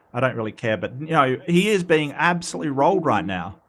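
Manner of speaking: ordinary delivery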